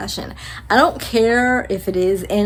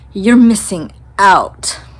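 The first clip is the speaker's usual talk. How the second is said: snotty, snooty tone, raised voice; 5 dB louder than usual. Retelling what a short guy came back and said to them, mimicking a snotty tone. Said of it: "in a snotty tone of voice".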